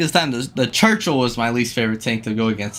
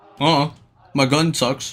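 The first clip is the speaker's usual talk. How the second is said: ordinary talk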